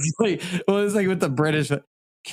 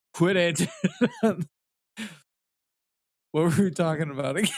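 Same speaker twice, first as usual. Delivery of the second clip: stifled laughter with swooping pitch; 2 semitones higher, 3 dB quieter than usual. Trying to change the subject while holding back laughter: trying not to laugh. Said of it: "I'm trying not to fucking laugh".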